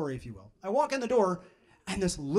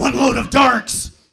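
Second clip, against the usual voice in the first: loud, gravelly, barking superhero voice; 5 semitones higher, 9 dB louder than usual. Comparing their own laundry to Batman's, the speaker delivers his line in a gravelly Batman voice. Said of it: "the gravelly voice is hard".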